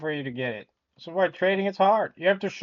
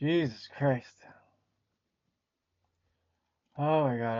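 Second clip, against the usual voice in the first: giggling through words, lower and quieter; 5 semitones lower, 6 dB quieter than usual. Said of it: "I can't stop laughing".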